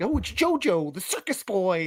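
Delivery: mock all-excited eager exclamation, swooping sing-song voice. Imitating Tommy talking about a player: imitating Tommy being excited. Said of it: "And he's all excited".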